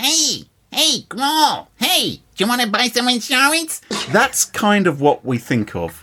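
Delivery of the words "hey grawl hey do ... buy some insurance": put-on squeaky, high voice in an American accent. Describing an insurance commercial's mouse character, in its American accent. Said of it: "when it comes to an American accent".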